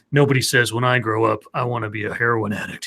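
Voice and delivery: low, grim narrator voice. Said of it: "grim voice comes over and says".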